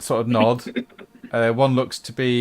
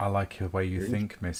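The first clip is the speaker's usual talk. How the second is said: very quiet, soft, hushed, under the breath; 4 semitones lower, 10 dB quieter than usual. In a role-play scene, a character speaks to another character, speaking quietly. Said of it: "He says quietly".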